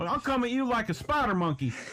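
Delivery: put-on Southern twang, pitched very high. Translating another speaker's line into a put-on Southern accent. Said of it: "translate into Southern for you?".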